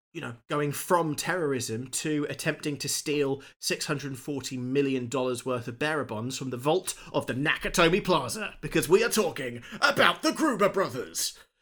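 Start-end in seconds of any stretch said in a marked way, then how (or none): 8.6-11.3 dramatic TV narrator voice, much higher pitch. Recapping the Gruber brothers' backstory for a co-host, in X Factor narrator voice. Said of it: "I went fucking X Factor narrator voice".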